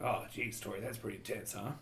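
very deep, very quiet, hushed orc voice. Voicing a friendly orc potion seller answering a player. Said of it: "friendly, uh, uh, orcish man".

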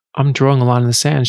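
usual speaking voice

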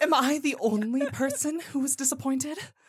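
British royalty voice. Reading a game review aloud in a destitute British royalty voice. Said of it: "Andy made that person sound like a, a destitute, like, a British, like, royalty".

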